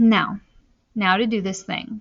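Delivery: ordinary delivery, nothing marked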